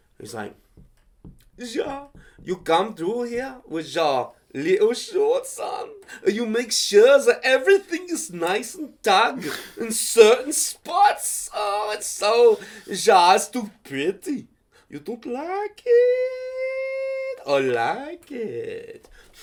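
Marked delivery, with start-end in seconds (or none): 1.6-19.1 very slow, drawled, swooping sing-song German accent. Showing what a Dana Carvey German voice sounds like: Dana Carvey German accent. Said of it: "I'm trying to do a German, Dana Carvey German".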